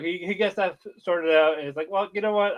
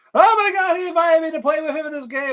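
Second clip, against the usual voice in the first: mock thrilled, squealing gush, pitched very high; 11 semitones higher, 5 dB louder than usual. Retelling an anime scene where the girl squeals after logging out: imitating a character squealing. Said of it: "squealing and all this".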